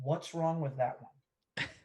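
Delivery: speaking in a whisper. In character, asking whoever is closest to them, whispering. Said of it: "I am going to whisper".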